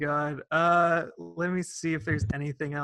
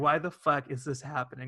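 plain

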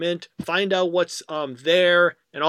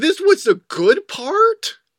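high-pitched, loud, slow, disbelieving. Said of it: "you'll be like".

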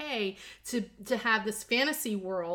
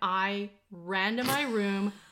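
usual speaking voice

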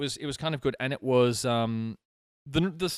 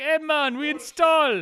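put-on Jamaican accent pitched very high; 14 semitones higher, 4 dB louder than usual. Describing how Jamaicans talk about installing cable, in a put-on Jamaican accent. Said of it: "Jamaicans are like".

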